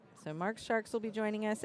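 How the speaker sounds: ordinary delivery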